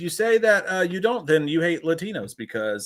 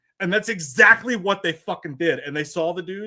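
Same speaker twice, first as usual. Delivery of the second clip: ordinary talk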